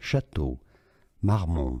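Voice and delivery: French-accented pronunciation. Comparing how a name is said, giving the French pronunciation. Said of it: "let's have a listen to the French pronunciation".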